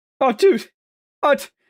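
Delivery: very high-pitched, breathless, baffled gasping voice. After describing Mark's manner, the speaker performs a baffled, breathless Mark Wahlberg impression. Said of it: "he's always baffled and out of breath".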